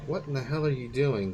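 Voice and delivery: ordinary talk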